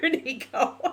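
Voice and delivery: high, laughing through happy tears. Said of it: "now I'm crying again because I'm laughing".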